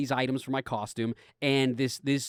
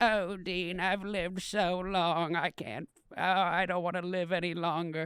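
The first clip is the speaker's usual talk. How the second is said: put-on slow, very old British woman's accent; 3 semitones higher, 6 dB quieter than usual. Retelling what the speaker's grandma said: old British woman accent. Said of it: "a British accent, but only of a ninety-year-old woman".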